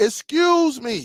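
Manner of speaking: mild call projected across a distance. Calling for staff who were all helping another customer: retelling a very loud call. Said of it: "And I said it very,very loud".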